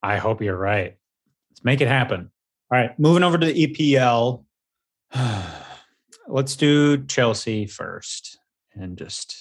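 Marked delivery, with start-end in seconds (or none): 3.0-9.4 downcast, dispirited, sad, slow delivery. Moving the discussion over to the epl, starting with chelsea, sad. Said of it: "you sound so sad".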